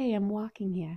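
put-on New York accent. Recalling a YouTuber's line, the speaker quotes it in a New York accent. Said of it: "in an like New York accent".

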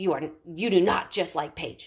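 put-on harsh, mock tone. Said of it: "that harsh talk that you just said".

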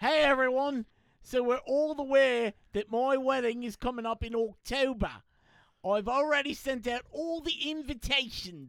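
fake put-on Australian accent. Announcing the speaker's upcoming wedding to everyone, in an australian accent. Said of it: "I need Australian".

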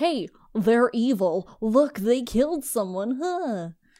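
loud, slow, deliberate voice. Mocking a show's writers by voicing them: impression of the writers. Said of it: "That's my impression of the writers".

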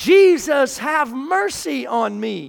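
mock cry, slow and stretched long. Retelling how a blind man cried out to Jesus: imitating a blind man shouting. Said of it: "to start shouting".

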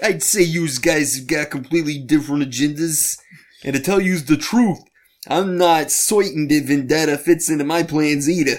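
put-on old-fashioned Bronx accent. Retelling what the mohawk guy on the page says: old-timey Bronx accent. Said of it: "talks like an old-timey Bronx guy".

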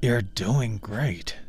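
through clenched teeth. Ken encourages the beast while easing out the hook, through clenched teeth. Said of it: "Ken encouraged through clenched teeth".

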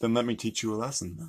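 soft put-on British accent. Playing an accent game, attempting the British one: British accent.

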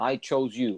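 ordinary talk

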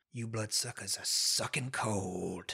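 hushed half-whisper, cold and drawn-out. Voicing a captor who grabs a player by the neck: half-whispering in character. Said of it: "he sort of whispers in your ear".

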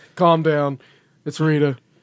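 put-on matter-of-fact voice. Retelling a scene, quoting Zordon calming someone down: matter-of-fact Zordon voice. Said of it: "very, like, matter of fact".

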